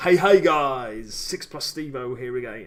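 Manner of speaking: loud, slow, drawn-out belted delivery. You are doing impressions of other YouTubers and give an intro as a Stevo impression. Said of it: "impressions of other YouTubers".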